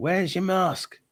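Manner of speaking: very high, shrill, screaming voice. Retelling a man in a garage shop screaming about a mask: imitating a man screaming. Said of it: "who screamed at me".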